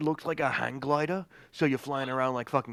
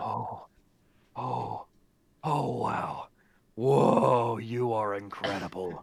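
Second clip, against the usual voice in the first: very slow, drawn-out put-on talking-sword voice; 3 semitones lower than usual. Voicing the Tiamat sword as it reacts to the players: put-on talking sword voice. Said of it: "I really shouldn't be doing this voice".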